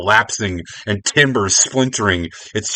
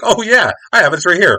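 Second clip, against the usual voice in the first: bright, cheerful, helpful, pitched-up voice; 10 semitones higher than usual. A character in a story being told pulls something out and announces it to others, acting cheerful. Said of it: "this everyone yells".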